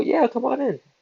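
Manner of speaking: very high, mock-cheery, put-on welcoming tone.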